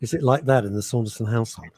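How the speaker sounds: usual speaking voice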